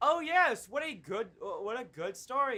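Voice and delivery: mock condescending, humoring parent tone. Imitating how a game character sounded: imitating a parent humoring a kid. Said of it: "like a parent talking to their kid".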